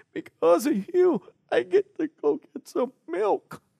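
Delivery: crying, high-pitched, breathy sobbing.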